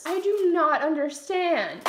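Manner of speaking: loud, slow rant of outraged disbelief.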